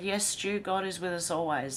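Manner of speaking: ordinary talk, nothing marked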